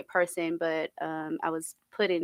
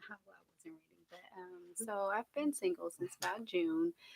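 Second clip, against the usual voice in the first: barely raised, very soft, quiet voice; 10 dB quieter than usual. Interviewee answers how long they have been single: very soft voice. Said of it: "You got a really soft voice".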